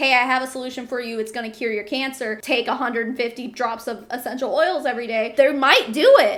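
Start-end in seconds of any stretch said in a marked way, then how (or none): none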